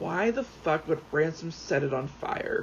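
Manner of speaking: plain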